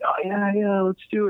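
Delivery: mock eager, keen, high-pitched and excited. Imitating people on a call agreeing to the plan: imitating excited people. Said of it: "and all excited about it".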